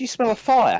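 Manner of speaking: high, worried voice with sniffing. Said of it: "I'll start sniffing and go".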